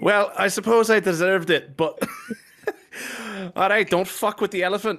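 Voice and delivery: high, howling laughter through the words. Voicing a bloodied character who looks at two others, laughing while talking. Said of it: "just start howling laughing".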